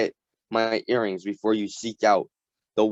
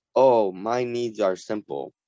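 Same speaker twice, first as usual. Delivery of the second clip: ordinary delivery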